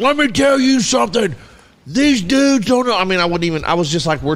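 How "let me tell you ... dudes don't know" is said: loud, very high pro-wrestler hype voice. Retelling own words from a stream that got banned: loud wrestling voice. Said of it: "I was talking in a wrestling voice".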